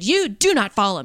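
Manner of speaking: hard, stern, severe, no-nonsense tone. Retelling warning off a man who was following: imitating a stern warning. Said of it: "very sternly to him".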